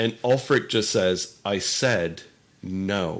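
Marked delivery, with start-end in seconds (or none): 1.4-3.2 very calm, cool, level, fully composed, flat. Voicing Ulfric refusing a guard reaching for his sword: very calm, flat. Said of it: "Very calmly, kinda flat".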